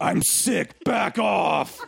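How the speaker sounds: very slow, rough, rasping demonic voice. Retelling stiff-arming a stock boy who tried to stop them, in a demonic voice from hell. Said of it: "in what must have sounded like a demonic voice from hell".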